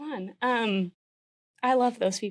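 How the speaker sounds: crying while talking. Continuing to talk about veterans while crying: crying while talking. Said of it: "I didn't think I would cry this early".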